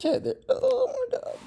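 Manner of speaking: voice cracking and breaking up at very high pitch. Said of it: "fucking voice crack".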